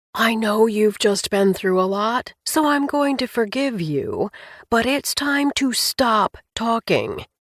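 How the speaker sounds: loud, theatrical, projected stage whisper. Reading a story aloud, a character leans across the table: stage whisper. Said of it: "in a stage whisper said".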